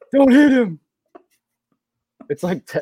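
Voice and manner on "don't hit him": shrill yell, very high, very loud. Imitating the coach yelling at the students on the court: imitating Jon Scheyer yelling. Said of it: "talking like this when he was on the court, yelling at the students".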